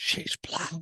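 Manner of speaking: breathy whisper, under the breath. Retelling what people say about someone's marriage: imitating someone whispering. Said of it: "And then they always whisper".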